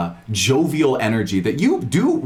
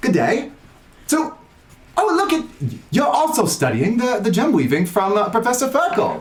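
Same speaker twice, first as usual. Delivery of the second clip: put-on very high, amateur Australian accent; 11 semitones higher than usual. Quoting what he says, trying an attempted Australian accent. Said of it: "I can't do the Australian accent like uh, Denton, but I am going to try".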